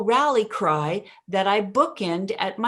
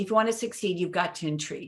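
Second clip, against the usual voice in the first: inflection drops away, falling pitch on intrigue; 6 dB quieter than usual. Coaching how to say a sentence stem, with downward inflection on intrigue. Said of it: "Downward inflection, bury it".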